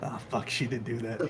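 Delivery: very quiet, low grumbling mutter under the breath. A character answering a rebuke, muttering under his breath. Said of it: "He mutters underneath his breath".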